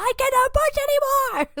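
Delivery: mock very high, fed-up, frustrated scream. Retelling the driver screaming on the radio when asked to push: imitating Fernando Alonso screaming. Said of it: "was screaming like".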